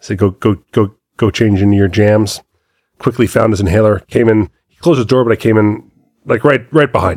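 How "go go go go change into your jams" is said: ordinary talk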